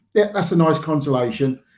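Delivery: ordinary talk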